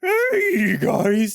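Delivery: very high-pitched, drawn-out, stretched "hey". Showing a listener how the Percy Jackson audiobook reader does it, in a Pegasus voice. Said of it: "Pegasus voice like".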